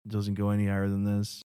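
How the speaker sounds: quiet monotone that never rises. Describing a comedian who is very quiet: Steven Wright impression. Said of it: "it's a good impression".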